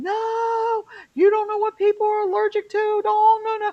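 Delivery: play-acted very high scream, long drawn-out no. Retelling stopping others from fetching herbal tea, retelling own screaming. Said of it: "And I'm like screaming".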